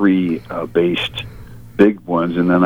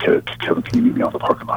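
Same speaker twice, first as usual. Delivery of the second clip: halting, stammered, stuttering delivery; 3 dB quieter than usual. Recalling Steve asking to meet in the parking lot, imitating Steve's stutter. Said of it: "He'd stutter".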